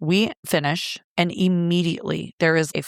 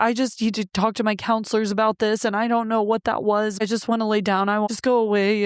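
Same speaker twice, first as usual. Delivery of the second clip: mock tearful crying, higher pitch; 4 semitones higher than usual. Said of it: "He starts crying".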